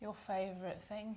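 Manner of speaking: mocking tone. Announcing the topic of exercise to the other speaker: sarcastic. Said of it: "Why are you saying that sarcastically?".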